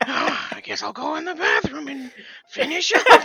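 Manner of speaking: loud, high, belted put-on character voice. Trying out an impression for another speaker: Miss Piggy deep voice. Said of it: "I was trying to do Miss Piggy when she does her deep voice".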